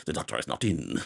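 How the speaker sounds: fast, muddy, unintelligible mumble. Imitating how Robert Downey Jr. talks in the movie: fast, mouth barely moving. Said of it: "that is the way that he talks throughout the movie".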